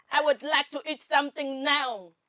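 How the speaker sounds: very loud, harsh, high German accent. Asked to say a phrase with a german accent, harsh german accent. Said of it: "they're always very harsh".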